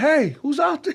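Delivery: play-acted, very high, urgent screaming yell. Retelling a car crash, trapped in the car: retelling own scream for help. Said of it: "I start screaming".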